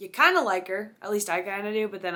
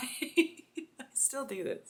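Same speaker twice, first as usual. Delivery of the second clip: talking through laughter, higher and quieter; 5 semitones higher, 7 dB quieter than usual. Speaker admits something to video viewers, laughing while speaking. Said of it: "I'm laughing because it's so stupid".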